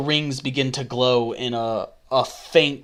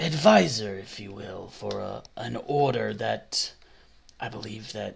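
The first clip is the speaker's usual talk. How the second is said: put-on creaky, raspy, rough, low old voice; 3 semitones lower, 6 dB quieter than usual. Speaker voices a very old half-elf advisor: rough, low old half-elf voice. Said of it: "So he's a very old half elf. ... doesn't do rough, low voices like that very often".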